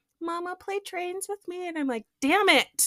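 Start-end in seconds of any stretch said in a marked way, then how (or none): 0.2-1.7 put-on tiny, high, small preschool child voice. A mother imitates her young son asking her to play, little tiny voice. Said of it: "comes to me with his little tiny voice".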